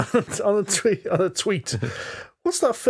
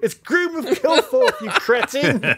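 acted-out shouting with a raised, high pitch; 6 semitones higher, 4 dB louder than usual. Speaker recalling yelling at a podcast in the car; retelling a shout at the radio. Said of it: "I'm shouting at the radio".

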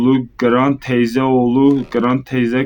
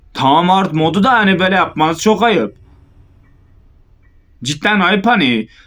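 irritation rising bit by bit, voice pitched up; 6 semitones higher than usual. Gamer complaining about the hard mode while playing, getting angry. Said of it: "Sinirleniyorum yavaş yavaş".

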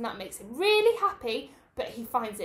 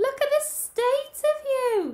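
very high, drawn-out gasping exclamation; 13 semitones higher than usual. Narrator reads Mrs. Bear finding Baby Bear back from the chimney; gasping. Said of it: "she gasped".

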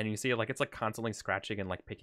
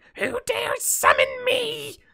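very high, very loud, booming, rough imp voice; 12 dB louder than usual. Speaker voices the imp being summoned, imp voice. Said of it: "And the imp says".

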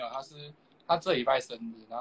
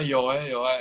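normal talking voice

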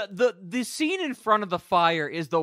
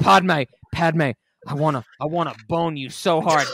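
besotted, moony, pining, lovesick longing; 4 dB louder than usual. Retelling a movie scene, mocking a lovesick Jedi. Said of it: "he's like".

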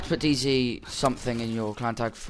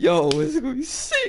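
raised pitch, higher and louder; 4 dB louder than usual. Talking about a guest coming on stream: voice gone high. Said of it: "Why did my voice get so high?".

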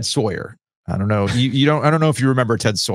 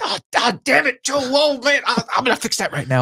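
exasperated swearing in a very high voice. Retelling Ted's reaction on learning of his mistake: imitating Ted cursing in frustration. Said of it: "he curses like".

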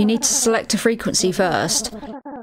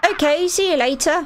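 strange put-on posh voice; 6 semitones higher than usual. Voicing one of the kids in the story, in a weird posh accent. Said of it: "Why did I give you a weird posh accent".

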